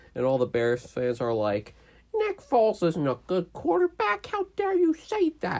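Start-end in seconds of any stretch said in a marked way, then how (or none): 2.1-5.6 put-on very high, swooping annoying voice. Mimicking Bears fans defending their quarterback, in a mock annoying voice. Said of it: "I'm just doing an annoying voice for an annoying statement".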